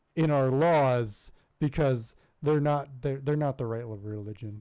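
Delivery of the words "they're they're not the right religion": normal talking voice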